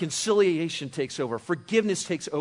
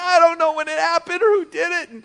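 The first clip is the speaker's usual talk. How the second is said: mock child crying, much higher and louder; 11 semitones higher, 8 dB louder than usual. Retelling a story where a boy answers a woman, imitating a crying child. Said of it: "And he's just crying".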